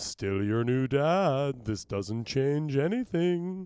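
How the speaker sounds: very slow, long drawn-out "dad". Playing the new dad in a table read: Bela Lugosi voice. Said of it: "some use for that voice someday".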